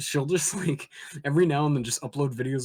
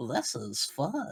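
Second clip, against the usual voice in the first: put-on cartoon toddler voice, quieter; 2 semitones lower, 5 dB quieter than usual. Doing the voice clip from a game as Chuckie Finster. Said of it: "Every time I do Chuckie".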